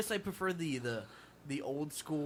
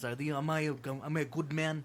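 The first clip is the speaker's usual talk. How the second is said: put-on monster creature voice; 3 dB quieter than usual. Imitating De Niro's Frankenstein creature for friends: terrible Robert De Niro impression. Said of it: "that's a terrible De Niro impression".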